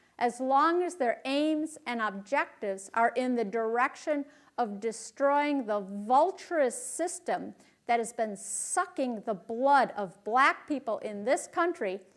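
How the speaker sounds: usual speaking voice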